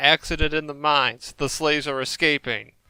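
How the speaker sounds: ordinary talk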